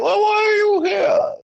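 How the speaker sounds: voice pushed up very high. Describing a movie character to friends: Bane voice. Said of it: "the one who talks like".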